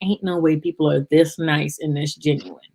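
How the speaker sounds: ordinary talk, nothing marked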